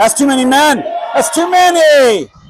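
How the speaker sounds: very high, loud yelling, many words drawn out. Game commentator reacting during play, yelling into the mic. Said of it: "Sorry, yelling in the mic".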